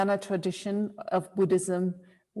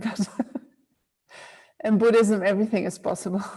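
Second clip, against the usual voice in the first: speaking with laughter throughout. Answering a question about introverts, apologizing, laughing while talking. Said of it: "I'm sorry that I'm laughing".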